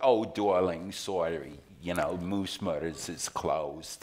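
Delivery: put-on New York-accented speech. Retelling a call for theater tickets, the woman answers in a new york accent. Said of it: "with her New York accent".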